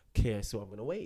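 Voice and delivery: ordinary talk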